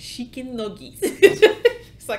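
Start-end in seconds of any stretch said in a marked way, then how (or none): 0.0-1.0 put-on soft, breathy voice with a Spanish accent. Retelling a man ordering chicken nuggets in Spanglish, imitating a Spanish accent. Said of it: "speaking in English with that Spanish accent".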